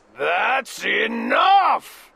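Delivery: growling bear voice. Reading a story aloud, the bear cuts in, growling bear. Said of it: "growled the bear".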